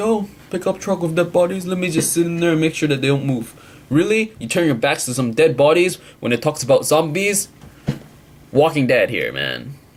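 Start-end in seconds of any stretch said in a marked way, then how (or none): 0.0-3.5 high, casual, unbothered, nonchalant musing tone. Mocking a character who sits by dead bodies: imitating Andrea, nonchalant. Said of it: "just being nonchalant".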